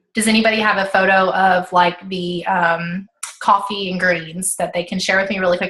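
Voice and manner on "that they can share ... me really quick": normal talking voice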